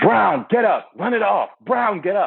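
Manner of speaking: high, drawn-out coach-style yelling scream. Recalling his football coach yelling at him over his broken leg; imitating coach screaming. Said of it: "my coach screaming at me".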